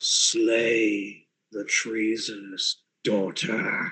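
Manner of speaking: deep, quiet, rasping voice, slay drawn out. Game master voices a second voice in the player's head, deep and rasping. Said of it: "a deep, rasping voice that simply says".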